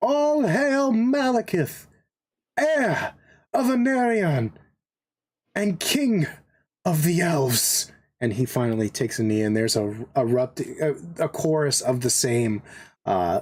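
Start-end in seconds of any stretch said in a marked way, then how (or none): 0.0-7.9 high, loud shouting, projected far over distance. A storyteller voices one man standing amid a kneeling crowd, shouting. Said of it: "he shouts".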